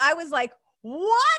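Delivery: thrilled, high, loud, surprised squeal.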